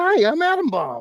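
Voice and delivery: very high, loud put-on puppet voice. Recalling a voice done for a puppet on a stream, put-on puppet voice. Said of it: "I did a voice for it".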